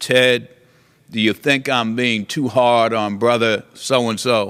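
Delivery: put-on booming voice. Recounting what the judge said to him in a hotel room, booming voice. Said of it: "in his booming voice".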